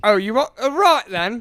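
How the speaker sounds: put-on mock Cockney accent. Asked to read a british story in an english accent, choosing a cockney accent. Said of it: "do Cockney".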